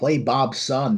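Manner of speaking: put-on American accent. Asking whether the other speaker imitates the intro: imitating an american accent. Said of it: "in, like, an American accent? Like".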